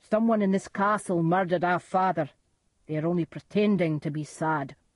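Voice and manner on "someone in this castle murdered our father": plain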